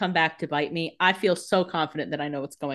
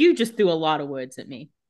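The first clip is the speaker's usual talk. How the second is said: ordinary talk, nothing marked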